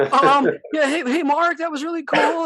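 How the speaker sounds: put-on very high, loud, squeaky little-girl voice. Retelling greeting a man walking by: imitating own little-girl voice. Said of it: "like a little freaking girl, dude, my vo-".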